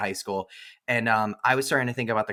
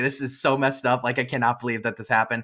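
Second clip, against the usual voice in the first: ordinary talk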